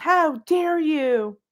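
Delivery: mock indignant, affronted, high, outraged outcry. Imitating outraged women reacting to the speaker's claims: imitating outraged women.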